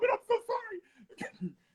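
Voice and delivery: very high, crying falsetto, tearful pleading wail. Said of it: "I was whispering in his ears".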